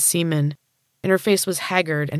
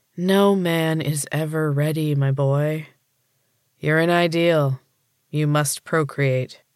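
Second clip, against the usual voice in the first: sighing heavily, slower pace. Replying to a boy who says he isn't ready, with a heavy sigh. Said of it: "Pratt sighed heavily".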